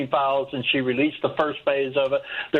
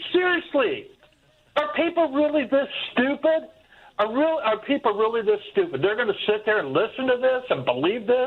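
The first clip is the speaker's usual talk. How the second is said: raised voice, louder and higher; 9 semitones higher than usual. Complaining about a vote on the files: getting loud. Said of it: "I know I'm getting loud".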